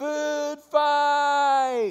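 high, loud yell through cupped hands. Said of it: "puts his hands to his mouth and yells".

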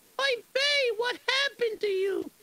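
very high screeching cry. The narrator's wife comes into the room and calls to him, screeching. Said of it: "and she screeches".

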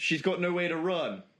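normal talking voice

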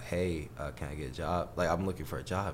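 ordinary delivery

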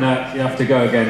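ordinary delivery

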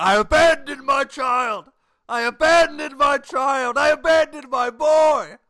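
very loud, shrill, high, drawn-out screaming. Imitating a film character's classic scene: imitating Daniel screaming. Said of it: "he's just screaming".

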